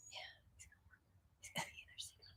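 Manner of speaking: very soft, secretive whisper.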